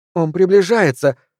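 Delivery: short, sudden blurted cry. Narrator reads Arden in a car as another car closes in, crying out. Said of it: "вскрикнула Арден".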